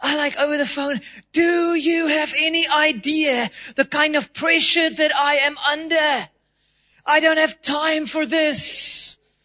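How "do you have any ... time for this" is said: heated, slow, angry, raised voice. Speaker retells losing it with a woman over the phone; retelling raising her voice. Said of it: "I'm raised my tone of voice".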